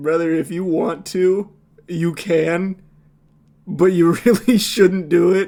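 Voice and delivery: calm, soothing, sultry voice. Describing how the officer warns a man, imitating sultry tones. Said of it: "like the sultry tones of his voice".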